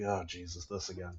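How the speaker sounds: very quiet, worn-out, fed-up, weary grumble. A Thrak guard, asked loudly whether they are slaves, answers in weary, slumping exasperation. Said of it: "One of them like kind of slumps".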